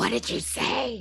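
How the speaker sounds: altered, disguised voice. Player voicing a character who corners someone at knifepoint, in a different voice. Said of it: "Like in a in a different voice".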